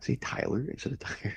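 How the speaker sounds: soft whisper under the breath.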